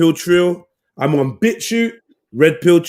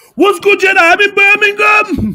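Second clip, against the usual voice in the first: very high, lively, raised voice; 5 dB louder than usual. Imitating how a friend sounds on calls: imitating a friend's voice. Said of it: "that's how she sounds".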